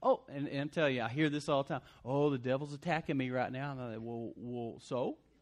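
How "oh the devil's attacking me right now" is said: mock, imitated passive and timid complaining tone. Pastor mimics church members who complain of attacks, in a mock passive complaint. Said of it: "some of you are just way too passive".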